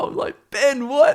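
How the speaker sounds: very high, rising, baffled exclamation, squealed.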